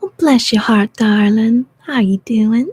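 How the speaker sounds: very loud, put-on Southern US accent. Doing her voice for a greeting: put-on Southern accent. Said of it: "you like my southern accent".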